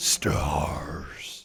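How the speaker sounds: very deep, throaty monster growl from the throat. Talking about the one word Nemesis says, the speaker does a Nemesis impression. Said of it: "Six out of ten for that impression".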